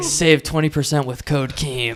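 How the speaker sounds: put-on evil company executive voice. Acting out an evil company's CEO pitching a discount code: imitating Keemstar. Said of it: "Keemstar is the C E O of this evil company. He's like".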